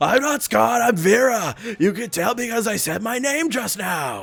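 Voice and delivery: loud yelling. Reading a game character's line aloud, correcting the delivery: yelling in character. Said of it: "I should have, like, yelled it".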